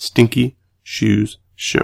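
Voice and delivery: slow, soft, careful, word-by-word enunciation. Giving the podcast's Twitter handle to listeners, with slow, careful pronunciation. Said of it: "I have to say it slow".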